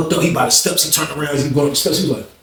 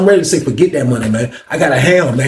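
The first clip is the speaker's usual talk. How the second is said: plain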